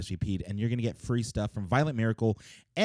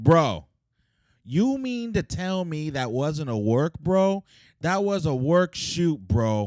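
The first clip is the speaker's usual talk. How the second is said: pitched up, insistent, heavy stress on "bro"; 6 semitones higher, 4 dB louder than usual. Doing an impression during a podcast about wrestling: Vince Russo impression. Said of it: "that's my Vince Russo impression".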